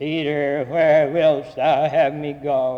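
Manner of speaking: slow, dismal, nearly sick movie voice.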